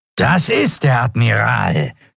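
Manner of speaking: rough, rasping reptilian snarl. A narrator reading the reptile Draxyl's line, in a rasping snarl. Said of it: "schnarrte der Draxyl".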